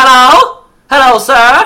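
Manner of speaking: very high put-on transatlantic accent. Trying out a transatlantic accent while greeting a sir, in a Katharine Hepburn transatlantic accent. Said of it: "I'm doing very Catherine Hepburn".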